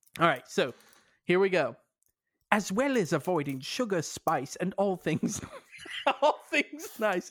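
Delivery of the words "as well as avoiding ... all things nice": put-on British accent, read aloud. Reading an article aloud after agreeing to do it: British accent. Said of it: "read it in a British accent?".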